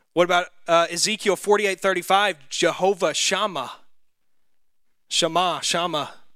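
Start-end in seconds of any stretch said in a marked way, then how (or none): 2.4-6.0 Southern-accented speech. Reading out a Hebrew name of God from a verse, southern accent. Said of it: "That's my southern accent coming out too".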